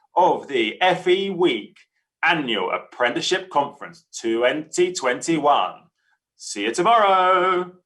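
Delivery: loud, slow, put-on radio announcer voice. Announcing day three of an apprenticeship conference in Tom Buick's radio voice. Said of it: "I'm doing this in the voice of Tom Buick's best radio voice".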